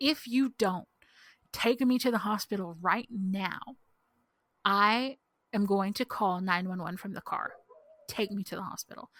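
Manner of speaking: acted firm, threatening voice. Retelling how she finally threatened him to get her to the hospital, a retold firm threat. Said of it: "I finally have to threaten him".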